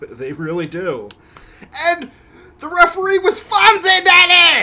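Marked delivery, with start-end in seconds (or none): 1.9-4.6 very high, loud yelping holler. Recalling the referee of an old match: Bill Alfonso impression. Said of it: "my Bill Alfonso impression".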